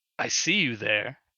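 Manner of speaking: gravelly, smoky, raspy radio-host voice. Describing a radio DJ who turns toward the listener: gravelly Nino impression. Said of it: "her voice is all gravelly".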